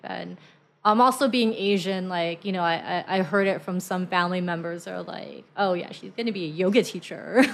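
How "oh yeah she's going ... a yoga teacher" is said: put-on scornful, mocking tone. Quoting what family members said: retelling in a mocking tone. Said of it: "mocking tone".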